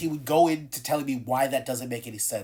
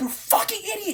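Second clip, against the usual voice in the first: aggressive chest-out yelling, very high. Showing how one's own yelling sounds: yelling with a lot of bass. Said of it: "I yell with a lot of bass".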